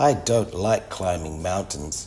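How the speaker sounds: plain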